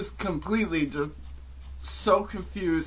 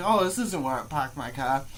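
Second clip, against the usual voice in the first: ordinary delivery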